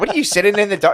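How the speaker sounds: high-pitched, scolding, nagging voice. Describing a mom who flicks on the lights, the speaker quotes her: imitating a nagging mom. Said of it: "My mom every time she's like".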